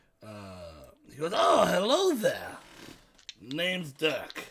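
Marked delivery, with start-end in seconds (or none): 1.3-4.4 loud, swooping, put-on goblin character voice. Speaker voices a goblin sitting at a desk as the group enters; goblin voice. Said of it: "a goblin sitting at like a desk".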